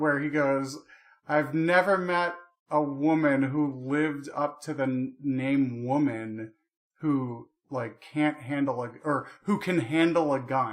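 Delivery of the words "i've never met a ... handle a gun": ordinary talk, nothing marked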